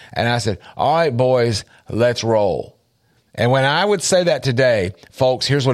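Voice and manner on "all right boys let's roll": usual speaking voice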